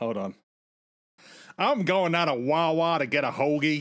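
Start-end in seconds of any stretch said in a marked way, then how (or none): 1.6-3.8 higher, louder fake American accent. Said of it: "in a fake American accent".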